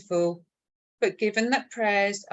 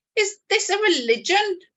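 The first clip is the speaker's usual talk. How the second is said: high-pitched, loud, accusatory voice; 11 semitones higher, 5 dB louder than usual. Narrating a story, voicing a lady asking at the door, accusing. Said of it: "to ask in an accusing manner".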